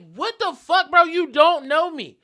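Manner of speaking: very loud, high-pitched screaming yell. Retelling a street argument with a stranger: retelling own screaming. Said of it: "And I'm screaming at him".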